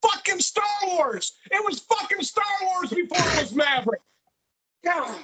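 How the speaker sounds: very high, play-angry yelling outburst, put on. Show host to a co-host who hasn't seen Afterlife: mock yelling. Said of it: "Are you done yelling at me?".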